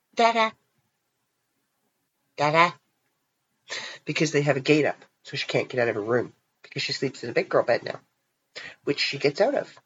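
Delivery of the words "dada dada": put-on high, little toddler voice, calling out. Retelling hearing the little girl call from her bedroom, in a little toddler voice. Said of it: "this little voice from the bedroom".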